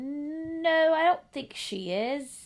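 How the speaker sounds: very slow, high, bad posh British, stretched-out no. Retelling a man's unsure answer, slipping into a horrible Mary Poppins accent. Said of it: "That was a horrible accent. ... I just went into, like, Mary Poppins right there".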